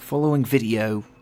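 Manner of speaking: worst-ever attempt at put-on British accent. Parodying the narration of a ghost-proof video, bad British accent. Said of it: "I'm done with the British accent".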